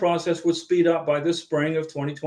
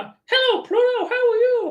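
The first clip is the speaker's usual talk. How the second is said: high, swooping, squeaky voice; 4 dB louder than usual. Greeting viewers in a video, Mickey Mouse impression. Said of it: "that's my Mickey Mouse impression".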